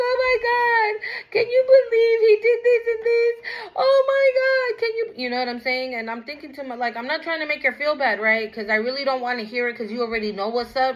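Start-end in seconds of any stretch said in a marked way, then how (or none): 0.0-5.2 put-on tearful crying voice, higher. Retelling how a friend would call about him: imitating someone crying. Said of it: "she would call me crying".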